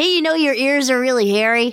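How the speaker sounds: put-on playful, teasing kid-hero voice. Retelling an episode where the kid hero keeps ribbing Yoda, as young Harrison Ford. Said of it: "channel my best Harrison Ford as a kid".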